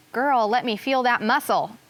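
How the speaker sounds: ordinary delivery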